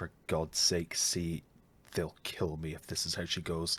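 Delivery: muttered under his breath. Baron, resisting the urge to hold on, before dropping the rope; muttering under his breath. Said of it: "mutters under his breath".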